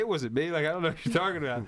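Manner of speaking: ordinary delivery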